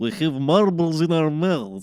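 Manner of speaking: loud, put-on Eastern European accent. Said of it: "Eastern European accents are so identifiable".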